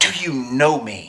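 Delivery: imitated exasperated voice. Retelling what a woman said to the speaker, retelling an exasperated question. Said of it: "she said in an exasperated voice".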